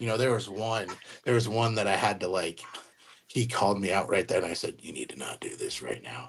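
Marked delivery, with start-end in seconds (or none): 4.8-6.3 very low, very quiet, serious, stern voice. Retelling how they shut down someone who called them out, retelling a serious voice. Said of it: "I had to use my like serious".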